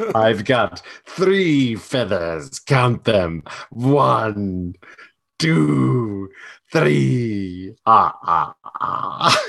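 each number spelled out separately, very slowly. Playing a wrestler in feathers: Count from Sesame Street voice. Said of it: "he sounds like the Count from Sesame Street".

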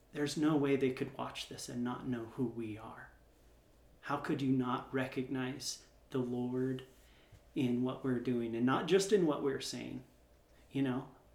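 ordinary delivery

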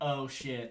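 ordinary talk

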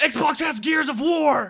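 very loud, high, drawn-out screaming outburst. Imitating a viewer at home screaming in their car: imitating someone screaming. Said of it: "you're just screaming in your fucking car".

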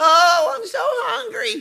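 shrill, very high, slow, dragged-out mocking tone. Explaining what mocking means by echoing a child's complaint, mocking a hungry child. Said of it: "That's mocking somebody".

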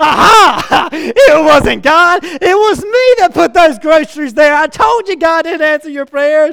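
high, loud, gloating shout.

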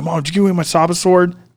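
mild, high half-shout. Retelling yelling at mom over a lost sword: imitating yelling. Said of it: "yelling at my mom".

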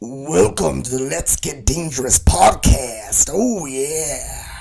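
very loud, slow, drawn-out bellow, "yeah" stretched. Opening the podcast with a forced, all-out Randy Savage impersonation. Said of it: "that's my best Randy Savage impersonation".

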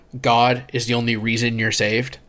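ordinary delivery

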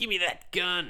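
dumb high cartoon voice. Discussing who would voice Rocket, imagining his take: stupid Rocket voice. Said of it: "he would do a stupid fucking voice".

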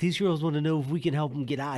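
put-on Virginia accent. Retelling what a coworker said about helping stuck drivers: imitating a virginia accent. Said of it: "He got, like, a Virginia accent".

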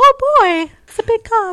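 sexy voice, pitched way up high and loud. Answering a request for an impression: sexy Minnie Mouse voice. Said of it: "Do you do a sexy Minnie Mouse still?".

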